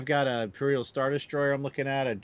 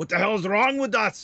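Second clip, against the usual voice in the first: put-on Austrian accent, pitched up; 8 semitones higher, 4 dB louder than usual. Answering a question as Arnold Schwarzenegger, Arnold Schwarzenegger Austrian accent. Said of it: "I will answer that as Arnold Schwarzenegger".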